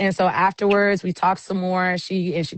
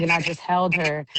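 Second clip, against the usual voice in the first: normal talking voice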